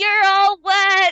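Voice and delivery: little squeaky voice, very high and very loud. Imagining a voice from the second story after a water attack, little voice. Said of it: "a little voice go".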